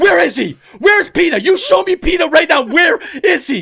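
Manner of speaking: play-acted very loud, very high, furious near-shout. Retelling an argument over a thrown bowl, she re-enacts her own near-yelling rage. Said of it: "And I was like yelling about".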